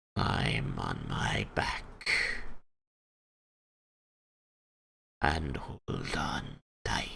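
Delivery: soft, gentle, hushed whisper. A game narrator voices a dragon addressing Ordwin, gentle dragon voice. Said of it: "She cranes her neck around and says in a gentle tone".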